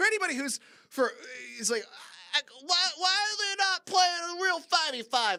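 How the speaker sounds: loud, high-pitched whining.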